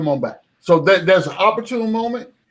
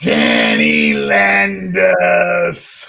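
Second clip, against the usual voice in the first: very slow, swooping put-on voice, drawn out, pitch swinging; 4 dB louder than usual. Introducing my man Danny Landis, done in a Freezy voice. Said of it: "I'm gonna try it in my best Freezy voice".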